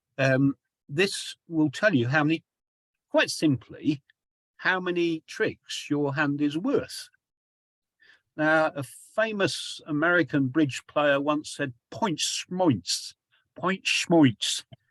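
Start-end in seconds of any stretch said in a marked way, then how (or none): 11.9-14.6 put-on New York accent. Explaining bridge, the speaker quotes a famous american bridge player in a new york accent. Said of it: "in a New York, York accent".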